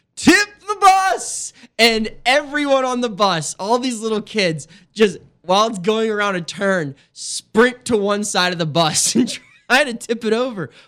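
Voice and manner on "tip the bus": put-on very high, shrill, rallying yell of a ten-year-old. Retelling a school bus story where a kid stands and yells, retelling a yell. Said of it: "stands up in his seat and yells".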